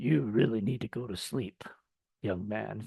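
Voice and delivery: very soft, low, barely audible horror-villain voice. Recalling a late-night meeting with the actor, retelling his words in his Tony Todd Candyman voice. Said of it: "in his Tony Todd Candyman voice".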